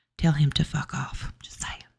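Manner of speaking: hushed whisper, under the breath. After warning that Jen will cuss again, whispering. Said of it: "I don't know why I'm whispering".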